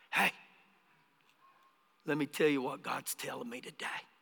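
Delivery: very hushed, very deep, gentle, soft-spoken murmur. Recalling a guy at Cannon Air Force Base who greeted the speaker: imitating a soft-spoken man. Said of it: "And he was real soft-spoken".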